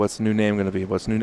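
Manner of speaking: ordinary delivery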